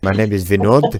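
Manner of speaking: put-on Indian accent. Acting out a husband taking the phone on a call, in an Indian accent. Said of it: "puts on a reasonably convincing uh, Indian accent".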